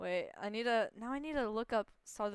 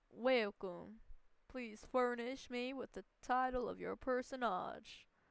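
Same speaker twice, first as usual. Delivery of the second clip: fumbled, failed stab at a country accent; 3 semitones higher than usual. Admitting they can't do it, the speaker tries anyway: attempted country accent. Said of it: "I don't know how to do a country accent".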